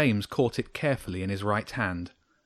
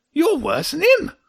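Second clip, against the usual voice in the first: words spat out, very high and loud; 7 dB louder than usual. The hedgehog answers Jenny's kind words, spat out. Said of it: "the hedgehog spat".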